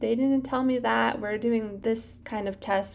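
normal talking voice

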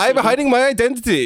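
put-on poor German accent. Hosts joking around in bad accents; one speaks in a bad German accent. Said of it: "Now there's Germanish".

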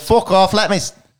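put-on with a Scottish accent. Retelling what a fighter told a booing crowd: Groundskeeper Willie voice. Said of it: "sounding a lot like groundskeeper Willie".

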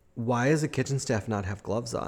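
ordinary talk, nothing marked

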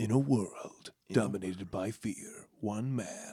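deep, hushed film trailer announcer voice. Talking about a dream job, demonstrating a movie trailer narrator voice. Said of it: "to be the movie narrator voice".

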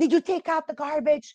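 put-on angry voice. Showing how a wife asks her husband a chore question: angry tone, acted out. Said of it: "we say it in an angry".

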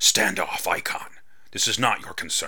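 words hissed out. Narrator reads the Sky Woman's words to the gargoyle, hissing. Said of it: "the Sky Woman hissed".

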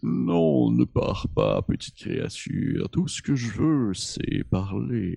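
very deep, very slow, drawn-out beast voice. Voicing a creature chasing a player, very deep voice. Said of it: "t'entends une voix qui dit très grave".

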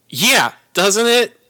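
shrill, high, loud, full-throated yelling. Character agreeing with someone about being shoved into a cop car, yelling. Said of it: "I don't know why you're yelling at me".

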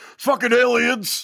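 very high-pitched, blurted out. Doing an impression after being asked for a great Jones impression: Alex Jones impression. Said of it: "you could do a great Jones impression".

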